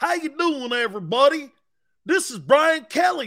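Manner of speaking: high-pitched fake Southern accent. Mocking a coach's put-on Louisiana accent: mocking Brian Kelly's fake Southern accent. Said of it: "where'd that accent come from, Brian?".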